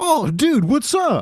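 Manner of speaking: very high, drawn-out, obnoxiously chipper voice. Retelling pulling up at the microphone, the speaker is imitating a guy's greeting. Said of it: "Like that".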